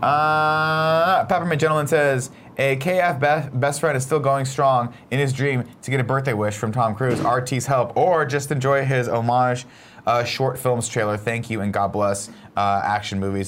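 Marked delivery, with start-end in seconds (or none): none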